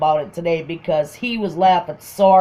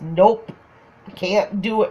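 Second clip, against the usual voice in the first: slow mock delivery full of laughter; 3 semitones higher than usual. Retelling what a man said coming out of his bedroom, imitating someone laughing. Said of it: "And he died laughing".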